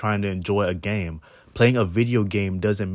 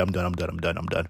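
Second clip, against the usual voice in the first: usual speaking voice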